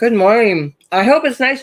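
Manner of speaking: talking while chewing, mouth full. Greeting a viewer who commented, talking while eating blueberries. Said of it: "I'm just eating blueberries".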